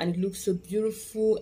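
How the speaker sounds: plain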